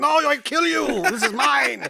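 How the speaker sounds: put-on terrible, rough, rasping North Korean accent. Telling a joke story about Kim Jong-il, in a bad Kim Jong-il impression. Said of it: "That's a terrible North Korean impression".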